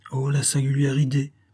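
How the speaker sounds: stammering. Flavie replies to Victor, who came to see her; stammering. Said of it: "balbutia Flavie".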